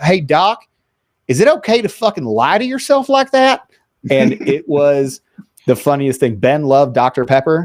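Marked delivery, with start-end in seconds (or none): 0.0-3.7 put-on perfect Southern accent, very high in pitch. Retelling what Ben asked the doctor: Ben's Southern accent. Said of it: "in his perfect Southern accent".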